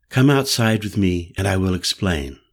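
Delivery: plain reading voice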